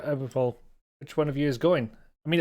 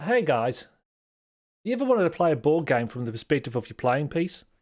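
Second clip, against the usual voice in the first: put-on Australian accent, a tentative attempt. Trying a line again after a request: attempted Australian accent. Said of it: "I'm gonna try it".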